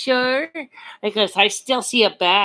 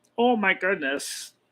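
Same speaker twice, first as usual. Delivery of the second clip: cartoon alien voice, quieter; 5 dB quieter than usual. Asked to do Marvin the Martian, [name] tries it: Marvin the Martian voice. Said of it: "Yeah, like that".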